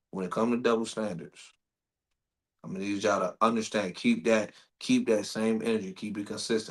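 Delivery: very calm voice, low and smooth.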